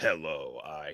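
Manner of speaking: deep, low voice altered through a voice changer. Showing the other speaker a Transformers voice-changing mask, using the Optimus Prime voice-changer voice. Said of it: "it voice changes".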